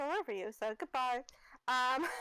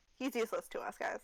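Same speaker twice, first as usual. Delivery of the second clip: usual speaking voice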